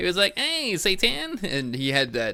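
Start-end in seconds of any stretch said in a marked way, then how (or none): 0.4-1.4 very high-pitched cartoon voice. Recalling a movie's take on Saddam Hussein, doing his high-pitched cartoon voice. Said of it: "and he had the high pitched voice".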